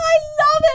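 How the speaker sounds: imitated yelling. Imitating the other speaker gushing about a brand: imitating someone yelling. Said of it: "you're literally yelling".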